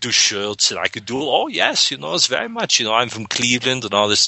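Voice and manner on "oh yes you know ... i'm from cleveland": fake German accent, pitched up. Showing the german accent a director taught: put-on german accent. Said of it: "I could do all this sort of German accent".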